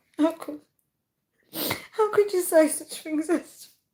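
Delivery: talking through laughter. Reacting to viewers' comments, laughing while talking. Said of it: "I actually can't stop laughing".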